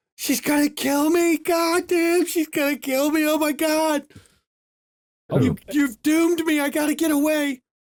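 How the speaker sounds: shrill, very high, terrified panicked scream. Game narrator voicing a caught man who screams when touched, panicked screaming. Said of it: "he screams".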